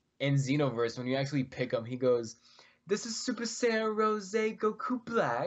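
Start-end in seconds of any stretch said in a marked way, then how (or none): 2.9-5.5 put-on British accent spoken at a very high pitch. Asked to quote a game character in a British accent, quoting him in a British accent. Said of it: "Will you do it in a British accent?".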